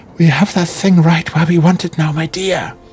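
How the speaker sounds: quavering, unsteady, high-pitched trembling voice. A wounded figure pauses to catch her breath, speaking in a trembling voice. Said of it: "in a trembling voice".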